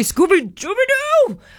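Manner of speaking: poor, clumsy, very high cartoon dog voice. Announcing a panel with the character's voice actor, doing a Scooby-Doo voice. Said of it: "I'm not very good at the voice".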